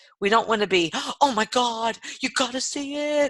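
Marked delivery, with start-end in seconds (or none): 1.2-3.3 gushing, overdone excitement, high and drawn out. Showing how not to sound when calling customers about specials: over-the-top excited. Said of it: "but not over the top".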